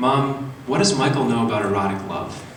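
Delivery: plain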